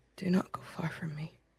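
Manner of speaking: soft, barely voiced, pleading whisper. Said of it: "as you whisper that into Marcus's ears".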